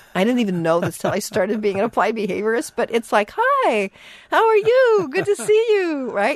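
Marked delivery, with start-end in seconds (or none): 3.4-6.1 very high, slow, drawn-out visitor voice. Showing the voice people put on to greet visitors, high-pitched visitor voice. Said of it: "if you get your visitor voice on ... You change your voice. Pitch goes up".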